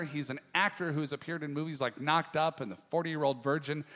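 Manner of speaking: normal talking voice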